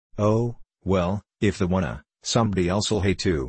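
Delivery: plain reading voice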